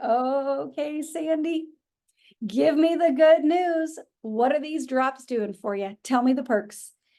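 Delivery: loving, warm, upbeat, positive coaxing tone. Acting out calling someone up for good news, with put-on loving positivity. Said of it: "with love and positivity in my voice".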